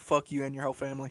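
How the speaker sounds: very quiet, hushed, utterly calm delivery. Speaker retells how they insult people without anger, imitating a very calm voice. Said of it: "I just say it in like the most calmest voice".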